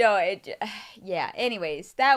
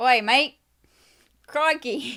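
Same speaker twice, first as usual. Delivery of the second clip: over-the-top, exaggerated Australian accent; 4 semitones higher than usual. Reading a discount code offer, addressing listeners by accent: Australian accent. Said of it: "this Australian accent".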